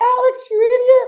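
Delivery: very high, shrill screaming yell. Retelling an imagined scolding from mom: imitating mom screaming. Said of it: "my mom's screaming".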